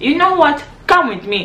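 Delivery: put-on, high-pitched, attempted Nigerian accent. Retelling what a man at the airport said to him, in an attempted nigerian accent. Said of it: "I don't know if I'm getting the Nigerian accent right".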